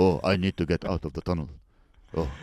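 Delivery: totally flat, emotionless, level deadpan monotone. Describing an old action movie, imitating Charles Bronson's flat delivery. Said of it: "he speaks like this the whole show".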